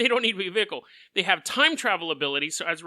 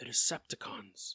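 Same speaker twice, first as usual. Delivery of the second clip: hushed near whisper, lower and quieter; 7 semitones lower, 11 dB quieter than usual. Retelling what a frightened kid says on a busy street: near whisper. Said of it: "He says it in a near whisper".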